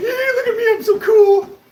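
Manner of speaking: very high, loud, giggly show-off bragging. Mocking trolls in the chat, imitating giggling trolls. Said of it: "they're just giggling to themselves".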